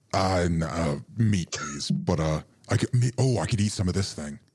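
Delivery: big, hulking storybook frost giant voice. Voicing a hulking frost giant talking to the party: frost giant voice. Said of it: "a hulking frost giant".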